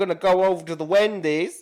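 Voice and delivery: loud put-on American accent. Asked by friends to show one, the speaker attempts an American accent. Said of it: "can do an American accent".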